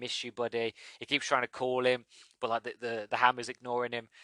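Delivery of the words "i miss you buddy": whispered. Retelling a film scene where a character whispers: imitating a whisper. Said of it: "whispering to Stormbreaker".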